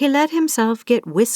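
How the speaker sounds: ordinary delivery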